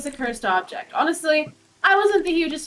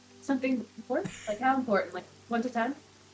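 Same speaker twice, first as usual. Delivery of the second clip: voice brought down, hushed and private; 3 semitones lower, 9 dB quieter than usual. Asking a companion about information in an open campsite: lowered voice. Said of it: "I lower my voice".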